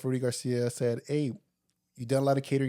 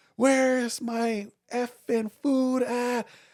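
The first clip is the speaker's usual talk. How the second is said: mock raging, very high, drawn-out scream; 11 semitones higher, 4 dB louder than usual. Retelling how the furious chef at the hotel kitchen yelled: imitating a screaming chef. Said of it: "and he was screaming".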